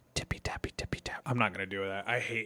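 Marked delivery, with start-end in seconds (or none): 0.1-1.2 mock ASMR whisper, put-on, quieter. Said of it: "I'll do some A S M R stuff".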